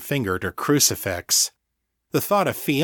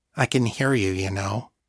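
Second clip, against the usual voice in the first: usual speaking voice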